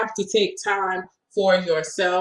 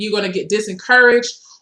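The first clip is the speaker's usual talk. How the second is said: plain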